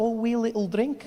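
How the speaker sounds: put-on, imitated Scottish accent. Describing how scottish people talk, in a scottish accent. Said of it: "Scottish people do that so well. They're like".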